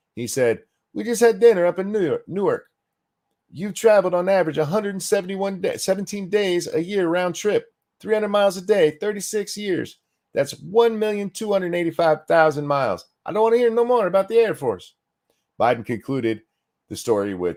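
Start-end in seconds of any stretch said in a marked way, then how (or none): 0.9-15.0 put-on very high, clumsy Italian accent. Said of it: "I can't do an, uh, Italian accent".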